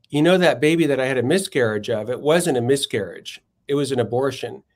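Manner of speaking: plain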